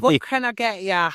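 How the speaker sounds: imitated London accent. Imagining how a woman in a photo talks: imitating a London cafe worker. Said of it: "working in a cafe in London smoking".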